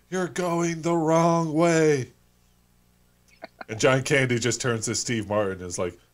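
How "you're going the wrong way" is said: very high, stretched, drawn-out screaming. Retelling a movie scene where people in a car warn the driver: imitating people screaming. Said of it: "everyone in the car is screaming".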